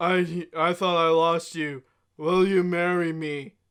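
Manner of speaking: acted, very low, dead, lifeless flat drone. Imitating a guy people call so monotone, flat lifeless monotone. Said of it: "he's so monotone. The guy is just there like".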